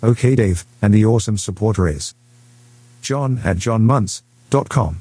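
male voice with an English accent. A voice device set to a male from England announces the featured supporter, English male accent. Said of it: "set up to be a male from England".

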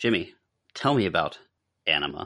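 sultry, flirtatious, slow and seductive delivery. Directed to ask Jimmy a question while making bedroom eyes at him. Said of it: "Make it sound like you're making bedroom eyes at him".

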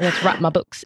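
put-on British accent. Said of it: "we put the British accent on it".

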